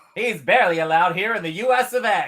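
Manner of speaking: put-on made-up, affected, borderline British announcer accent. Delivering a mock news bulletin, in a borderline British accent. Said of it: "that was like a borderline British kind of accent".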